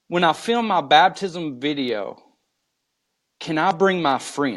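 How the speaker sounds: ordinary delivery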